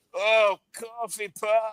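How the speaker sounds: mock old person voice. Imagining Johnny in a nursing home answering what he wants for lunch: imitating Johnny in a nursing home. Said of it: "Johnny's gonna be like".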